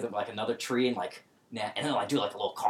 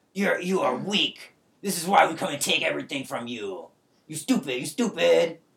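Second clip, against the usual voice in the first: loud shouting, higher pitch; 5 semitones higher than usual. The game master voices a raiding leader shoving a player's character: yelling taunts. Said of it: "I see you brought tribute to [name]. And he's yelling this in common. / he's gnashing his teeth. He's got a flail. He's kind of like swinging around. / And he's like, / And he's yelling this in common".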